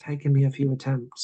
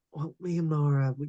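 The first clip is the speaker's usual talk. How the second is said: hushed, lowered, soft voice; 5 dB quieter than usual. In a roleplay scene, a character lowers his voice when asked about Laura. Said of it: "he kind of lowers his voice".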